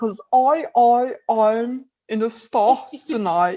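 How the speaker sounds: put-on heavy British accent, slow and drawn out. Talking about actors' accents, quoting an actor, Tom Holland's British accent. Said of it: "ele fala com sotaque britânico".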